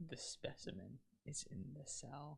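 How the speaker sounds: eerie, unsettling, creepy whisper. Reading out what it says, creeping out the other speaker: creepy. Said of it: "I say really creepily".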